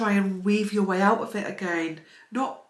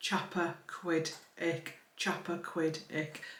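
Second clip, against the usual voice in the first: "Chapaquiddick" very slow, hushed, syllable by syllable; 4 semitones lower, 11 dB quieter than usual. Practising a hard word the way someone told him, very slowly. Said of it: "say it very slowly".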